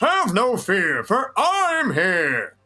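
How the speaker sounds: voice pushed through the throat, pitch swooping. Demonstrating a voice step that uses the throat: Kermit the Frog throat voice. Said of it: "step two includes using the throat".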